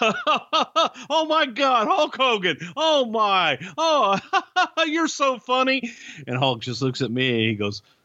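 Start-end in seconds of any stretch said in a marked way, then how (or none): 0.0-5.9 talking through laughter, very high, very slow. Speaker recounts a man in a red suit greeting an arriving guest, imitating laughing while talking. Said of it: "he starts laughing like".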